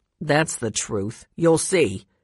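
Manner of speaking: grimly spoken. Narrator reading the man's line as he raises the rolling pin, in a grim voice. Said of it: "he said in a grim voice".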